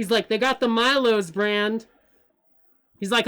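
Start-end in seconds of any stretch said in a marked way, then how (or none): 0.3-1.8 loud yell, calling out. Retelling a man in a store looking at tea, mock-yelling across the store. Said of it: "he's yelling this".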